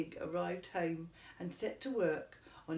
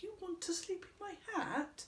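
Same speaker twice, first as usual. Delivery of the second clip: piercingly high, appalled, horrified squeal; 12 semitones higher, 4 dB quieter than usual. Reading a character's reply to a tiny mouse, horrified squeal. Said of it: "squealed Hamilton, horrified".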